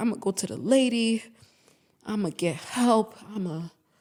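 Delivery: slow, tearful, pleading voice with crying. Retelling an emotional conversation where he cried: imitating someone crying. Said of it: "He's crying, like".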